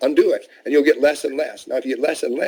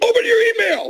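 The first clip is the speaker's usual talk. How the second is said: raised, loud voice, pitched well up. Describing a new text alert, the speaker voices the message, loud voice. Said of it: "I'm doing a loud voice".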